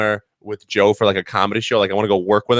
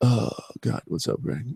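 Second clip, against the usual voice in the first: mock mournful, soft, breathy whispered moan, sigh; 2 semitones higher, 8 dB quieter than usual. Retelling a phone call with a friend: imitating a sad Joe Cocozello. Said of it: "the most sad Joe".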